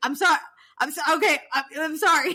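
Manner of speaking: loud, high-pitched, apologetic, stumbling over the words. Retelling a scene where Jax is yelled at and wants to hang up: imitating Jax apologizing while yelled at. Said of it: "so he's like".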